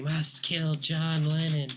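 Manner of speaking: whispering voice. Describing a voice heard in the street, whispering voice. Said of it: "you hear someone begin whispering".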